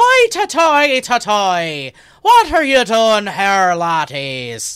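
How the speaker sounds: put-on very slow, swooping Irish policeman accent. Showing the others how he finds his Irish accent, in an Irish constable accent. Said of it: "Whenever I lose my Irish accent, I just think of uh, a constable".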